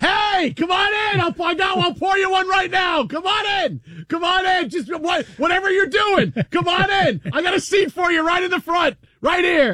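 keen, excited yelling. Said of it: "bartender yelling".

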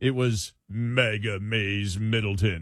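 put-on deep ad announcer voice. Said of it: "I'm just trying to impersonate the deep voice".

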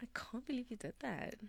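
whispered, teasing, flirty tone.

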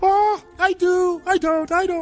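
squeaky high-pitched cartoon voice. Answering mock wedding vows, in a Mickey Mouse voice. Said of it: "I'm trying to do a Mickey Mouse voice".

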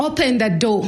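mild put-on scream. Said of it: "he kept screaming".

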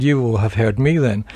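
ordinary talk

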